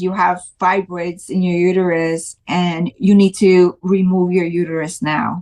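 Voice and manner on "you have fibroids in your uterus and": ordinary delivery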